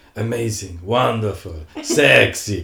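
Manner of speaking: put-on heavy Italian accent, loud. Retelling what a judge said loudly during a show: Bruno Tonioli thick Italian accent. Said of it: "in his big, thick Italian accent".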